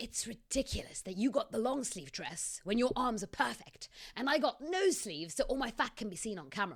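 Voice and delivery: theatrical stage whisper. Reading a story aloud, a complaint on arriving with others: stage whisper. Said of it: "I stage whispered to Bella".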